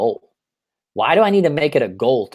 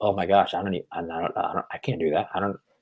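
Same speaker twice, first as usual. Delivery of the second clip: put-on fearful, doubt-ridden, stumbling stammer; 5 semitones lower, 7 dB quieter than usual. Retelling own inner voice of fear and doubt: imitating fearful doubt. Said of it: "I had this big fear and doubt say".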